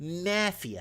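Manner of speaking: mafia with heavy stress on the a. Joking that something is pure mafia: strong stress on the a of mafia. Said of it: "You got to put an emphasis on the A".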